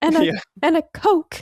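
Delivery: high-pitched, drawn-out, exasperated delivery. Imitating a character ordering at McDonald's: exasperated Zelda voice. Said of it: "consistently exasperated Zelda".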